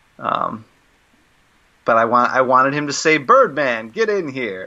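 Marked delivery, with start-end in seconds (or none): 3.2-4.7 talk-show host style announcing call. Acting out a line he wished a comic character had said: Stephen Colbert voice. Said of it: "in a Stephen Colbert voice".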